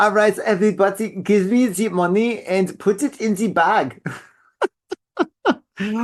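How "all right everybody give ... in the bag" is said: put-on German-accented speech. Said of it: "I did Schwarzenegger".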